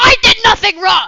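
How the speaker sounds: put-on shrill, very high, very loud kid crash-out yell. Retelling what a kid said after recess: imitating a kid yelling. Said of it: "crashed out".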